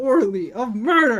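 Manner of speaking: loud voice breaking and cracking mid-sentence. Speaker working through a murder case with others, voice cracking. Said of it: "I think I voice cracked somewhere in there".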